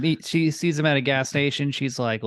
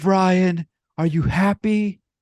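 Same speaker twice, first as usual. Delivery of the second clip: mock furious old man bellow, loud and high; 7 semitones higher, 6 dB louder than usual. Retelling how he slammed his fist on the table and yelled; retelling a furious yell. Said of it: "he like slams his fist on the table and he yells".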